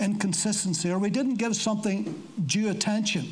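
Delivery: ordinary delivery, nothing marked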